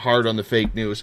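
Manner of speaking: plain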